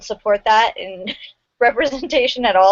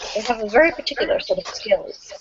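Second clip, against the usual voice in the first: bad, breathy, hushed put-on voice; 5 dB quieter than usual. Explaining why everyone was chosen: Liam Neeson voice. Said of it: "in my best Liam Neeson voice".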